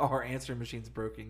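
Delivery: normal talking voice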